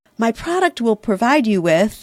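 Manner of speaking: normal talking voice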